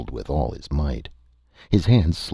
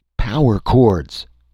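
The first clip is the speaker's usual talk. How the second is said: sudden, loud, high raised-voice yell; 8 semitones higher, 7 dB louder than usual. In the middle of the commotion, a man yells out: yelling. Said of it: "Tom yelled".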